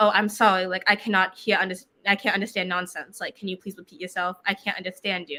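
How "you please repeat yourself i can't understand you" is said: ordinary talk, nothing marked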